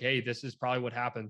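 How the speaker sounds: ordinary delivery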